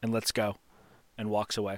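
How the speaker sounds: normal talking voice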